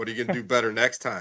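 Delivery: mock condescending doctor voice. Retelling a doctor's questions after a repeat injury: imitating doctor talking down, as to a five-year-old. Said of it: "he talks to me like I'm a five-year-old".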